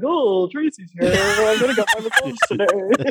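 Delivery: silly, dumb, simple, dim-witted horse voice. Asked why the horse got that voice, giving an example: dumb horse voice. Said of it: "dumb, dumb voices like".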